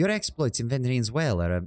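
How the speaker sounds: put-on Celtic-sounding accent. Attempting a character's accent mid-sentence, accent slipping into Celtic. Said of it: "that's slipping back into the, like, Celtic".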